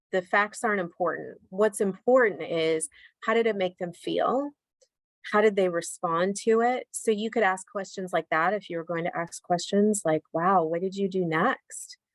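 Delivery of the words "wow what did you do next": curious, inquisitive, supportive tone, slower. Demonstrating how to ask a follow-up question, curious, supportive tone. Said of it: "the tone of my voice is a very curious but supportive tone".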